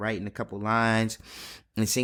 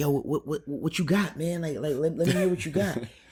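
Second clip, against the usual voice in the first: mock amped-up, eager, high-energy hype, pitched up; 6 semitones higher than usual. Retelling a co-writer eagerly asking to hear ideas: imitating high-energy hype. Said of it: "His energy is, is real up".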